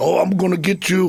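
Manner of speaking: put-on Minnesota accent. Mimicking one of Vern's collegiate Minnesota wrestlers, in a Minnesota accent. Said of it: "with the Minnesota accent".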